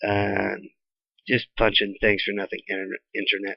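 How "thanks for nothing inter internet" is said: ordinary talk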